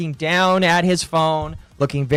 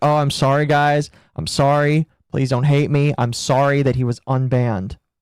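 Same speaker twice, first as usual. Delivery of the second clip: mocking, imitated tone, pitched lower; 3 semitones lower than usual. Mocking someone who keeps apologizing for an unban: imitating someone apologizing. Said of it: "He's like".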